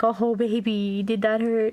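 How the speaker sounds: amused, light laughing tone, words very drawn out. Showing how a parent reacts to a child who fell, laughing lightly. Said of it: "if you just laugh and be like".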